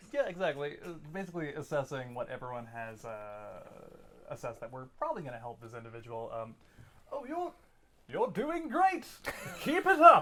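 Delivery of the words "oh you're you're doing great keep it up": shrill, very high, loud hollered voice. Playing a bard calling out encouragement to an ally: Walker voice. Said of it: "Walker voice!".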